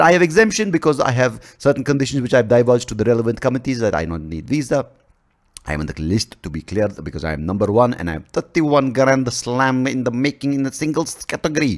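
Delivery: put-on Russian accent.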